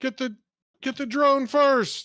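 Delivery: very high, loud shouted voice. Voicing an enemy who shouts to the others: NPC shouting an order. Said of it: "this guy shouts".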